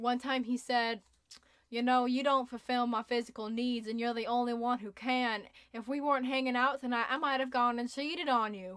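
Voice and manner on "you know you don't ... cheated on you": put-on fully committed Southern country accent. Quoting a first boyfriend from high school, in a redneck accent. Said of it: "that was the best redneck accent I've ever heard".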